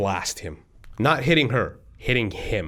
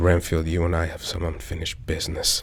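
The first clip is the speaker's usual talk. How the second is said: low mutter, said under breath; 6 semitones lower than usual. Player retelling what they said to Renfield, muttered under breath. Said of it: "I say under my breath".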